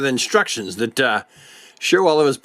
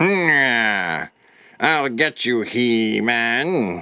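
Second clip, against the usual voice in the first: cartoon villain voice with a long, drawn-out hmm; 3 semitones lower than usual. Speaker voicing a toy figure as he puts it on the arm, Skeletor voice. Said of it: "that's Skeletor's voice, isn't it?".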